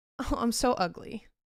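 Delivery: mocking, falsely modest put-on girl voice. Mocking a girl who knows she's pretty: mocking falsely modest girl. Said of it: "the girl who knows she's pretty, and she's like".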